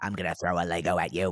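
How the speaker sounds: deep demonic voice. Acting out a child's threat, in a demonic possession voice. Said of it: "Yours actually sounds a lot like it".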